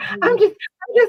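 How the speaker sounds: play-acted, very high, slow, weepy, drawn-out faltering crying. Retelling what an upset worker said: imitating someone crying. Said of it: "and she started crying".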